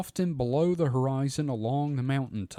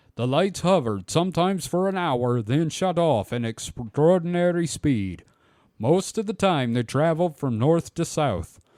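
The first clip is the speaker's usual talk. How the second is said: loud put-on Norwegian accent, edging toward Russian; 4 semitones higher, 5 dB louder than usual. Reading out a witness account about lights in a valley: Norwegian accent. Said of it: "the accent beyond the quote".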